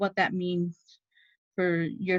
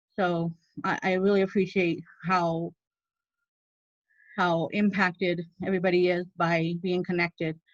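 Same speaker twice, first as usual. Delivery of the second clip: getting emotional while speaking. Speaker addressing a group before handing over to the next person, getting emotional. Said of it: "I'm just I'm really getting emotional".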